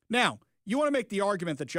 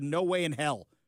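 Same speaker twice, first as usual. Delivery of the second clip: ordinary delivery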